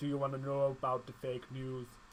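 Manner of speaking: bad impression, low, soft, growly voice. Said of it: "All right, Jamaican Trump".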